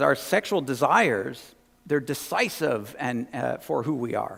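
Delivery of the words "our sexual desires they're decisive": usual speaking voice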